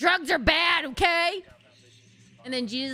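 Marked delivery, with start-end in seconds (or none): 0.0-1.4 slow, drawn-out, strict fatherly tone. Acting out God as a strict dad saying drugs are bad: imitating God as a strict dad. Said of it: "the strict daddy".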